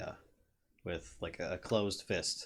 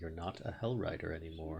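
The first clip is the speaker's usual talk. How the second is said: soft, very quiet, hushed, under the breath. In a roleplay, a character speaks to a woman in a very quiet voice. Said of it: "He says very quietly".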